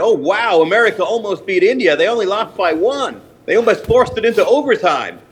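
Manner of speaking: deliberately poor, clumsy put-on American accent. Joking about a World Cup cricket score, in a bad American accent. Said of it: "put on a really what I thought was a really bad American accent".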